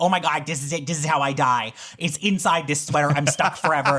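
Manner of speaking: acted, mock panicked tone. Acting out being stuck inside a sweater: acting out panic. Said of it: "you start to panic 'cause you're like".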